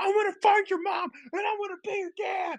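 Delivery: very high, freaking-out ranting yell. Retelling a clip of a man freaking out on a nine-year-old, imitating someone yelling at a kid. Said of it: "he's like yelling at some like 9-year old".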